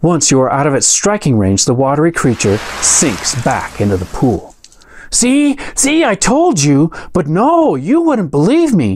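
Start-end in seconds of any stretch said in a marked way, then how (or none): 5.1-9.0 very high, piercing, screaming halfling voice. Narrating a game scene after a water creature attacks, voicing the screaming halfling. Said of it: "screams the halfling".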